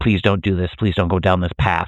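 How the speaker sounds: imitated begging, pleading voice. Describing a film scene where she begs him: imitating someone begging. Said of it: "she's begging him, like".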